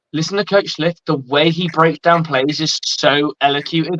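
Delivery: ordinary talk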